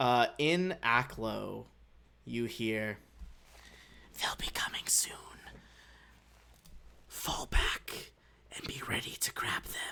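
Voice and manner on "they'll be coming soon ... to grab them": hushed, breathy whisper, barely voiced. Voicing creatures overheard through a device, plotting an ambush: whispering. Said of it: "a few seconds of whispering".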